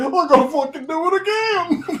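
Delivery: very high, cartoonish voice. Retelling a joke about Goofy on trial for homicide, in a Goofy voice. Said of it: "it was like Goofy goes".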